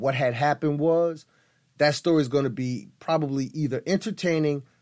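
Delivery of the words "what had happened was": plain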